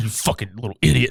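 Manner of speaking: fed-up, angry, cursing, scolding father voice. Retelling how the dad trudged downstairs after a fall, imitating the dad. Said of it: "Grabs him by the arm".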